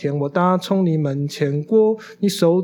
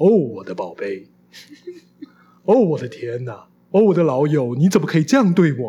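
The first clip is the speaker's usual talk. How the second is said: over-the-top, odd, exaggerated foreign-dub cadence and intonation. Imitating how dubbed foreign films talk, odd dubbed-film intonation. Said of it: "就是怪腔怪调".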